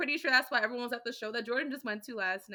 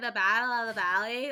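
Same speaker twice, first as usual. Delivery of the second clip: put-on Valley Girl accent with slurred vowels; 4 dB louder than usual. Retelling how a woman said a phrase: Valley Girl accent. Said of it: "she has like this slurry behind accent ... Like she said it like that".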